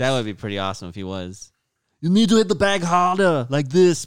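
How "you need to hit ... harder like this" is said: very loud, high, hard barking voice. Imitating Arnold as a trainer at the bag: Arnold voice. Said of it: "I don't know why I talk like Arnold".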